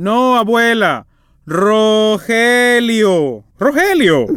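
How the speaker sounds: word drawn out long, called out. Rogelio corrects his grandmother, who got his name wrong, shouting. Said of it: "Pero no me grites".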